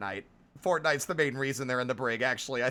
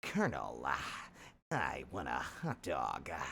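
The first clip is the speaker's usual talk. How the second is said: very deep, slow, drawn-out soldier voice, breathy endings; 11 semitones lower, 10 dB quieter than usual. Power washing in a game, joking: Solid Snake voice. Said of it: "This is becoming a character all on their own".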